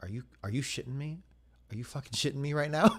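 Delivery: soft mutter under the breath, to oneself. Retelling a reaction as the movie ended: imitating muttering under breath. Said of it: "I actually muttered to myself under my breath".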